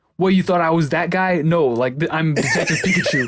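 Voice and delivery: put-on high-pitched Boston accent. Retelling a game trailer's character line: imitating Detective Pikachu's East Coast accent. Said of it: "some Bostonian or some, like, East Coast accent".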